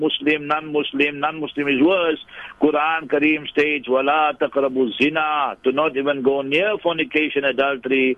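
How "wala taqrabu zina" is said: plain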